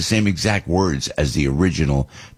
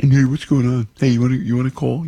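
really nerdy, high-pitched geeky voice; 7 semitones higher than usual. Speaker acts out phoning a friend of 25 years, really geeky voice. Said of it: "a really geek voice".

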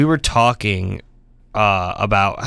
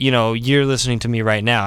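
plain

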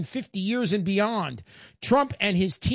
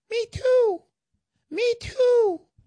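tiny, squeaky, very high little voice; 3 dB louder than usual. In a joke, a little voice at the teller's counter chimes in, tiny Uncle Sam voice. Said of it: "this little voice from down by your shins puts his hand up on the counter where the teller is and goes".

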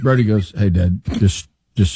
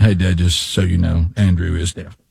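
low, flat, dry, expressionless deadpan delivery; 4 semitones lower than usual. Recounting a game, retelling someone's deadpan remark to Dad. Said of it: "was just deadpan".

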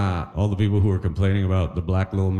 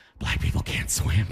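low whisper. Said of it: "why are you whispering?".

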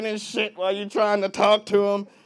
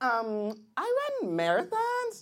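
put-on, slow, sing-song girl voice with drawn-out words; 3 semitones higher, 8 dB quieter than usual.

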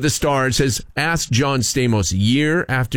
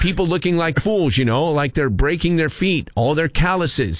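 normal talking voice

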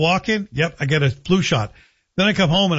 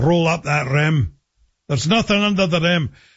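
put-on Scottish accent, slower. Speaker imitates how his wife, from scotland, would say it: scottish accent. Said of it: "how my wife would say it. Being from Scotland".

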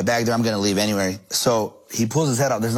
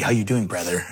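mock cocky, arrogant man voice; 3 semitones lower than usual. Telling a story, the speaker imitates an arrogant man greeting him: mock-cocky greeting. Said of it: "Like, cocky".

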